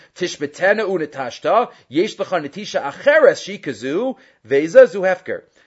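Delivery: ordinary delivery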